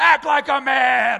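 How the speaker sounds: booming, very loud, drawn-out, rough yell. Picturing a soccer dad yelling at his crying kid: imitating a dad shouting. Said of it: "you hear him shout from the sidelines".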